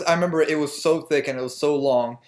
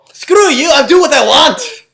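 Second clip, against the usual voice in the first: throat-straining, very loud, high, furious shout; 11 semitones higher, 11 dB louder than usual. Mocking how an actor played a calm, restrained scene, mock-angry yelling. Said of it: "Apparently blowing my voice".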